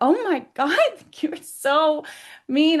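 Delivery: acted, high-pitched, childlike sobbing through the words. Retelling being hit by nasty energy and dropping to the knees, imitating sobbing like a baby. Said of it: "I am sobbing like a baby".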